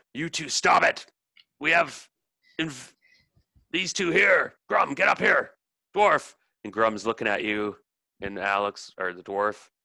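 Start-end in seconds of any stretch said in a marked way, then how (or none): 0.2-6.4 high, loud, bellowing voice. Play the captain ordering Grum and the dwarf to stop, as a bellowing captain. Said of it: "the captain bellows out".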